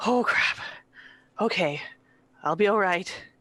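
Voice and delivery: winded, breathless, panting, gulping air between words. Voicing a character bent over, taking deep breaths: out of breath. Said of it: "just taking deep breaths".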